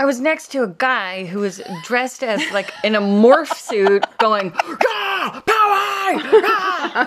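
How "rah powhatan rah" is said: put-on high-pitched, shrill, rowdy cheering shout. Retelling a guy in a morph suit at a football game: imitating someone shouting. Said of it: "every time he shouted".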